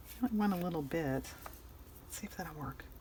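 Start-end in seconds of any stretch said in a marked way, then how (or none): 1.0-2.8 whisper, much quieter. Testing a purple gloss color, whispering.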